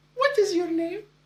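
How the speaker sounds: put-on delightful European accent, very high. Retelling the first question your wife asked you, in a delightful european accent. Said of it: "in the most delightful European accent".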